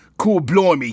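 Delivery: put-on Cockney accent. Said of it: "Cockney accent".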